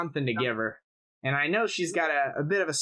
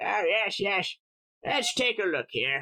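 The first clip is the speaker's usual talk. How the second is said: put-on very old, high-pitched, venerable orc voice; 5 semitones higher than usual. Narrator voices the shopkeeper's father, a venerable orc, coming out to measure a customer. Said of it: "you'll see a venerable orc come out".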